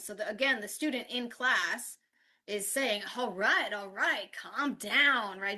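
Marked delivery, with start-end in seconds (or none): 3.2-5.4 over-dramatic, exasperated, dismissive brush-off. Retelling how a student acted out a class role play: imitating a student being dramatic. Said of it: "Being dramatic in this way".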